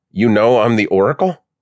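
high, incredulous, disbelieving, prodding tone. Krista questions the man who just called her Oracle, with disbelief. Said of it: "Krista prodded with disbelief".

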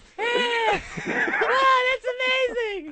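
very high, loud little sock-puppet voice. Demonstrating a sock puppet character with no depth, put-on higher puppet voice. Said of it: "I just made my voice go a little higher".

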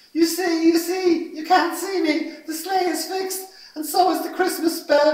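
very high, loud cried-out exclamation. Narrator reading a christmas story, voicing santa: crying out. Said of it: "cried Santa".

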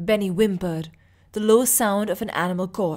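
ordinary delivery

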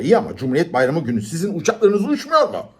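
put-on hot-tempered, furious shouting. Arguing with the airline on the phone, the narrator is shouting on the phone. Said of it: "Bağırdım telefonda".

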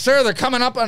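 put-on American officer voice. Complaining about Imperial officers in a Star Wars sequel: imitating an American-sounding Imperial officer. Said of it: "they're like American guys".

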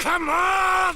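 loud, high, desperate pleading shout.

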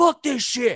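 sudden, high-pitched, top-of-the-lungs yell. Retelling a coworker's outburst in a quiet office: imitating someone yelling. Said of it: "yell out at the top of their lungs".

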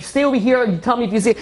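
mock desperate, frantic, urgent, pressing pleading. Recalling searching for a missing kid, the speaker reenacts screaming at everybody. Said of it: "I'm screaming at everybody".

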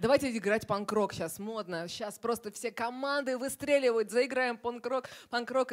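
excited, high, eager sales-pitch tone.

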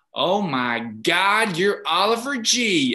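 put-on American accent, very slow and loud. Retelling a woman across the road who recognized him: american accent. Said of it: "I'll try and do an American accent".

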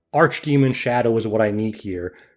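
normal talking voice

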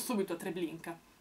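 ordinary talk

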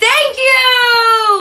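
mimicked loud shout. Retelling thanking a welcoming family on a first visit: retelling a loud yell. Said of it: "Why are you raising your voice?".

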